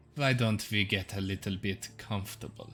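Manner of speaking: flirty, inviting, coaxing come-on tone. Voicing a woman in a silk dress inviting a player closer: flirtatious. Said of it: "flirtatiously looks in your direction and is like".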